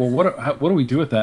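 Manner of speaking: ordinary talk, nothing marked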